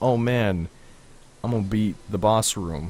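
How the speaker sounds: ordinary delivery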